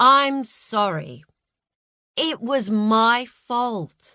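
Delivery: very slow, careful, cautious, soothing, placating tone. Napoleon speaking to Marcia after taking off his watch, slow, careful placating tone. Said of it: "in the slow, careful tone of someone placating".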